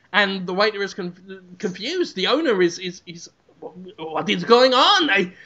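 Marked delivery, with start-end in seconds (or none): none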